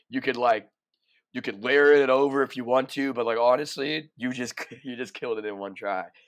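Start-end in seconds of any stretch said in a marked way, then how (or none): none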